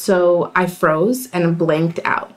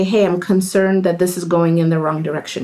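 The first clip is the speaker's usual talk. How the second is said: ordinary talk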